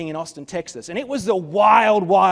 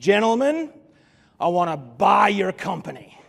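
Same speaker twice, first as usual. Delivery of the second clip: put-on Texan accent, best attempt. Retelling a man pushing a napkin across the table: Texan accent. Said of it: "said in his best Texan accent".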